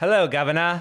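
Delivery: fake British accent, movie-style. Asked if you could be in an English movie, you try: put-on English accent. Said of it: "Let me hear it".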